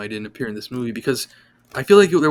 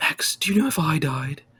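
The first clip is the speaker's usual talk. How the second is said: bad fake British accent; 5 semitones higher than usual. Recounting a show scene, voicing the lizard in a stupid, stereotypically bad british accent. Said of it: "stupid British accent that sounds really like stereotypically bad".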